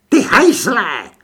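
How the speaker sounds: enraged, high, very loud screech. The succubus, to Franks as he shuts his suitcase: furious shriek. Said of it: "Sukuba vztekle zavřískala".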